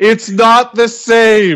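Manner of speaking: mock very high wailing scream, slow and drawn out. Retelling how a roommate screamed with a mouth full of chips: imitating a roommate screaming. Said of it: "screaming at me with crumbs flying".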